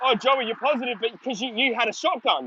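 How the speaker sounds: plain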